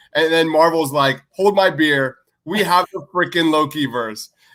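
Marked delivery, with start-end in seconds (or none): none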